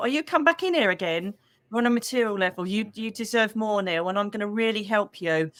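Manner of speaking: plain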